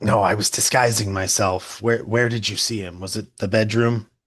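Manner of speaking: raspy, scratchy rat-creature voice. Recounting what a character says while in his rat hybrid form, scratchy rat-creature voice. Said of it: "that sort of scratchy voice that he has in that form says like".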